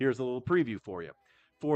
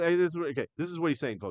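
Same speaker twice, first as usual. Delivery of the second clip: usual speaking voice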